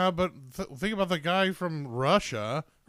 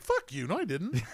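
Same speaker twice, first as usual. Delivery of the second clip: blunt, flat, unyielding tone. Retelling a caught curler's denial: imitating the Canadian curler's denial. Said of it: "The guy from Canada's like".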